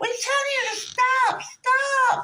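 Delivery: very high, very slow, drawn-out shouting. Retelling passengers yelling to stop the bus: imitating people yelling. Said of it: "And they're yelling".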